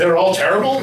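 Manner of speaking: ordinary talk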